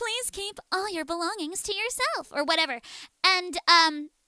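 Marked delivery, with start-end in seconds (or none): 0.0-2.3 put-on pretty announcer voice, higher and quieter. Retelling a tour announcement recording: imitating own pretty announcement voice. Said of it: "I did it pretty".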